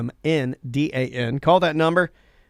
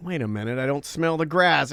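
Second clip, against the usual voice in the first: normal talking voice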